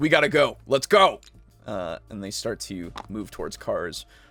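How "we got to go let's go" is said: seething, furious, cursing, raised voice. Voicing a dealer who finds the briefcase empty: furious. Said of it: "he's furious as he says".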